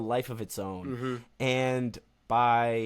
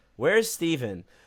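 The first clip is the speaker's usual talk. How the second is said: mock jeering, heckling scream; 4 semitones higher, 4 dB louder than usual. Retelling heckling the Tampa Bay players: imitating own screaming. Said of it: "started screaming".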